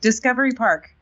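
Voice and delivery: called out loudly, pitched high. In character, shouting the name of a destination: shouting a place name. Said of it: "I'm shouting the name".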